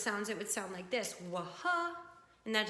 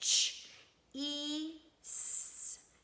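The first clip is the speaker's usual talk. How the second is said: "cheese" sounded out slowly, each sound pulled apart, pitched up; 5 semitones higher than usual. Showing how to sound out the word from the book: stretching out each sound. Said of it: "it would sound like this".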